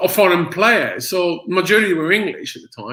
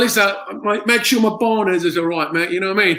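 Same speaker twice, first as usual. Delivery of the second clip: put-on Cockney accent; 2 semitones higher than usual. Asked for a cockney impression, answering: cockney impression. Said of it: "can you do a good, uh, Cockney impression".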